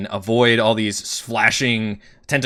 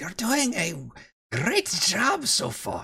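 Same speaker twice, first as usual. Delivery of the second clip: very high, soft insect creature voice; 9 semitones higher, 7 dB quieter than usual. Game narrator voicing an insect speaking from behind the players, insect voice. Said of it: "You hear the insect voice behind you says".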